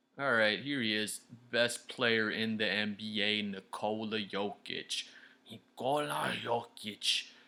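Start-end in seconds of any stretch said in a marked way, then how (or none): 5.5-7.2 fake, put-on Ukrainian accent. Introducing the best player in the league by name: put-on Ukrainian accent. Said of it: "Is that, like, a Ukrainian accent?".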